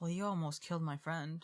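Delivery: low, quiet mutter under the breath. Muttering in character at a suspect: muttering under breath. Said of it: "Under my breath".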